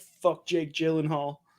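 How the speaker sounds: plain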